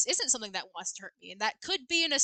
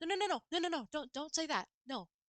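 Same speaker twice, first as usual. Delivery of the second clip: gentle, calming, soft, high, airy, light tone; 6 semitones higher, 5 dB quieter than usual. The speaker imitates a man gently calming people down, in an airy, light tone. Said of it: "like an airy, light tone of voice".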